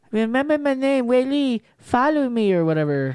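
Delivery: put-on exaggerated Chinese accent. Acting out for others what a woman said, in a very stereotypical Chinese accent. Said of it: "she had the most stereotypical fucking chinese accent".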